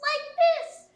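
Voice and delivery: loud, very high, squeaky little voice. Demonstrating the voice that goes with the light blue color, a squeaky voice. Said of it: "do you want to demonstrate your squeaky voice".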